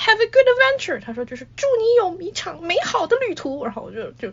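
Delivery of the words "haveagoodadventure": acted-out loud yell, much higher. Retelling how an old man shouted at her after handing over a map, shouting loudly. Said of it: "大爷就对我大吼一声说".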